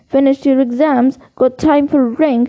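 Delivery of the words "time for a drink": plain reading voice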